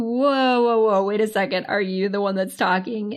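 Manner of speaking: normal talking voice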